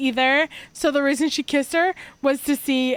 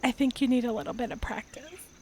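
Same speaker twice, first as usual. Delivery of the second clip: quiet, soft, close half-whisper; 2 semitones lower, 8 dB quieter than usual. Voicing a character who leans in close to her friend: half-whispering. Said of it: "She'll lean in and whisper".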